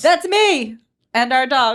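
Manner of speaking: high, loud, slow yell. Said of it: "Sorry, I'm yelling".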